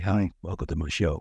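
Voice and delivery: showy, brash, cocky voice with American accent. Mocking how some hosts greet guests: imitating a cocky American show host. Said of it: "giving it Johnny Big Bollocks like some Americans would".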